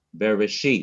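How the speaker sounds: Bereshit, final syllable -shit leaned on. Showing how to emphasize a word: stress on last syllable of Bereshit. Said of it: "I have emphasized the last syllable".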